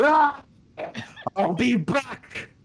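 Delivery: very high, stretched, drawn-out screaming grunt. Voicing a character tackled off a cliff: screaming grunt. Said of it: "a screaming grunt of".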